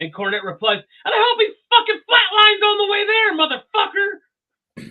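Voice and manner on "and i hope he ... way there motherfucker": acted-out shrill, very high, loud scream. Retelling how Cornette yelled at the cops about his fence: imitating Cornette screaming. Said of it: "He's screaming and yelling".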